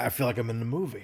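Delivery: ordinary talk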